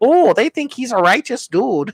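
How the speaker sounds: very high-pitched secretary voice. Retelling a movie scene, imitating the secretary from Ferris Bueller's Day Off. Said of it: "the secretary from Ferris Bueller's Day Off, and she's like".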